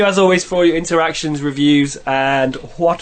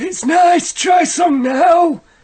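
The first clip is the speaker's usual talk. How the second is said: put-on old uncle character voice, pitched very high; 10 semitones higher than usual. In an improvised story, the heavy-smoking old uncle speaks to his niece, old uncle character voice. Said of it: "Said the old uncle".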